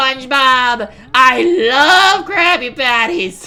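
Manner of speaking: high, loud, slow cartoon voice, "love" drawn out. Showing off a cartoon impression after praise: SpongeBob impression. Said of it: "doing a SpongeBob impression".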